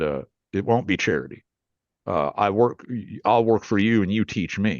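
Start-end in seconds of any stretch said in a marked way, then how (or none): none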